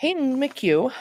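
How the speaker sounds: voice breaking and cracking mid-word. Reading out scholarship recipients' names, voice cracking on one. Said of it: "my voice cracked there".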